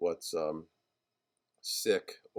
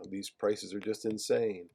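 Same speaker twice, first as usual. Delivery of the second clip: higher, pushy commercial announcer pitch. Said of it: "he takes on the voice of a, of a, um, commercial announcer".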